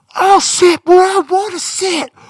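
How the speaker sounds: booming, loud, shrill, high voice dragged very slow. Retelling a passenger on a plane complaining, imitating a loud voice. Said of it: "a voice going louder than it should be".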